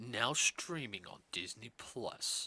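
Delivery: grand, slow, put-on dramatic performing voice. Trying the line again in a different voice: put-on dramatic voice. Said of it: "a different dramatic voice".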